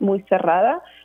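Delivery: ordinary delivery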